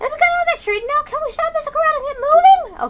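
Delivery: very high put-on teenage girl voice. Voicing a game character, the speaker uses a teenage girl voice. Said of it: "I'm not doing this voice anymore".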